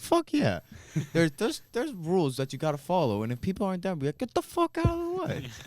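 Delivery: put-on thick, laid-on New York accent, swooping. Retelling Marty's reply to a question, in Marty's heavy New York accent. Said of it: "He's from like heavy New York accent".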